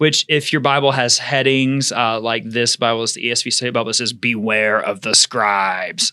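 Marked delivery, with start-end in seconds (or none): 4.1-6.1 chain-smoker voice, lower and slower. Reading a bible heading aloud to listeners, sounding like a chain smoker. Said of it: "Was that a like chain smoker?".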